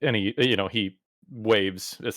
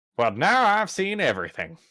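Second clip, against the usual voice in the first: put-on high, swooping villain voice with menace and southern accent; 9 semitones higher than usual. Narrating a game scene, speaker does a Skeletor voice with a southern accent. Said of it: "trying to get do the Skeletor voice while doing a southern voice".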